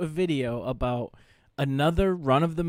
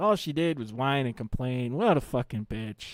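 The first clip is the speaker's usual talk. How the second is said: put-on fond, wistful, nostalgic old-man musing. Retelling what another speaker said about a woman, imitating an old man reminiscing. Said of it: "like an old man thinking about the good old days".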